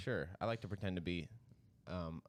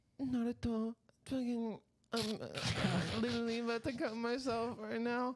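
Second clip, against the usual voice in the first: very high, tiny, put-on anime character voice. Retelling watching Naruto with a girlfriend: imitating Hinata's voice. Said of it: "Hinata does the thing where she's like".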